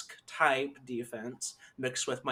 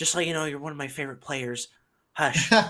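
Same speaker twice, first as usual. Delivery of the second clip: put-on child's whisper, mock secretive; 5 dB louder than usual. On a bench, speaker retells what a kid whispered to them, retelling a kid's whisper. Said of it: "he's like whispering to me".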